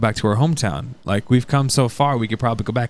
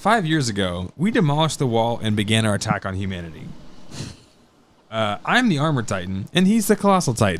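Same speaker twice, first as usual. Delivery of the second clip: normal talking voice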